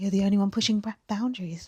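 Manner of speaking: lighthearted voice. Retelling what Sam said: Sam voice impression. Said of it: "try and do the Sam voice".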